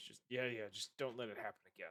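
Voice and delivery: rough, very gruff, gravelly voice. Acting out a man's dismissive reply, very gruff voice. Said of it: "in a very gruff voice".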